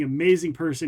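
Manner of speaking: ordinary talk, nothing marked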